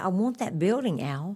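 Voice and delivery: ordinary talk, nothing marked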